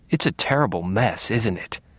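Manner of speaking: plain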